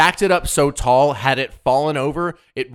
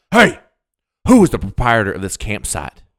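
put-on loud angry voice, swooping pitch; 4 semitones lower, 5 dB louder than usual. Retelling how the ranger demanded who ran the campsite: imitating angry Ranger Rick. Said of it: "he's pissed at this moment".

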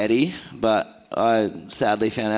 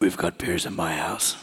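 put-on very deep voice, much lower; 4 semitones lower, 4 dB quieter than usual. Retelling how a mate invited the boys over, imitating a very deep voice. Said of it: "he has the deepest voice I've ever heard".

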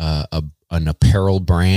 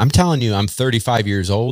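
usual speaking voice

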